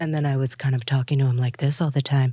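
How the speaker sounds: low sultry voice. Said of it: "more of a sexy lower sound".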